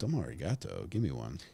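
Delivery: put-on Japanese accent. Hearing about donuts delivered last night, the speaker replies in a put-on Japanese accent. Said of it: "You can't get in trouble if an accent is fun".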